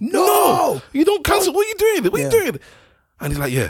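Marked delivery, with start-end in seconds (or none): 0.0-2.6 very high-pitched shrieking screaming. Retelling watching a financial advisor on screen, retelling screaming at the screen. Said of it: "I was screaming at the screen".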